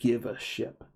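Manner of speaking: beastly snarling monster voice. Game narrator voicing a big creature that snarls at the party, snarling creature voice. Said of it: "he just snarls and says".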